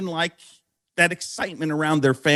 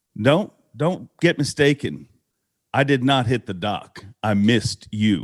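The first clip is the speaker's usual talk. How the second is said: put-on deadpan tone, lower; 7 semitones lower than usual. Retelling Rick's answer after his boat hit the dock: imitating a stone-faced reply. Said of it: "he looked up to me stone-faced".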